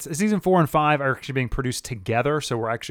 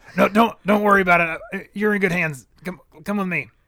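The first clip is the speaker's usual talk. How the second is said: stuttering, coaxing delivery, pitched up; 6 semitones higher, 4 dB louder than usual. Acting out a cartoon scene for the other speakers: Morty impression. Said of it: "[name] is doing an excellent impression".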